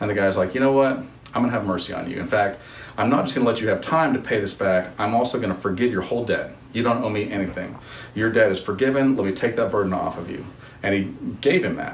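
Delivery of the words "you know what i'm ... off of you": plain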